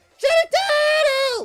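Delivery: voice breaking upward. Calling out for a shiny turtle while resetting: voice cracking. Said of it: "That voice crack".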